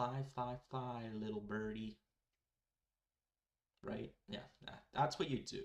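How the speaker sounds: openly sarcastic, tongue-in-cheek delivery. Joking that you should fly up into the tornado: sarcastic tone. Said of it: "I'm just being sarcastic".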